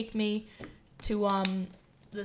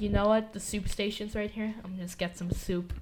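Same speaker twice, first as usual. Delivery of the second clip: ordinary talk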